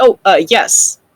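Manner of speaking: caught-off-guard, startled tone. An invisible character, after nodding unseen, answers in an almost startled voice. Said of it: "in an almost startled voice says".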